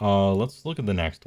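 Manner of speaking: usual speaking voice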